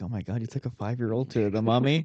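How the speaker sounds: mock judgmental ladies' tone. Retelling how ladies at the movie judged a father: imitating judgmental ladies. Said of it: "judging him".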